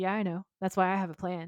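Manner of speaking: normal talking voice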